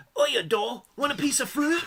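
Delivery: put-on full Australian accent, pitched very high. Mocking how a cartoon voiced Wolverine, Wolverine impression with an Australian accent. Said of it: "it's very Australian".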